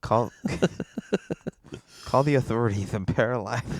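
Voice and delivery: terrible cartoon duck voice, very soft. Stuck with a neck massage tool on, a speaker calls for help in a terrible Daffy Duck impression. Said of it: "Why are you doing a terrible Daffy Duck impression?".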